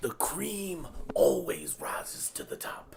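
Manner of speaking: whispered, intense pro-wrestling promo style voice. Doing an impression after the wrestler is named: Macho Man Randy Savage voice. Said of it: "a Macho Man Randy Savage impression".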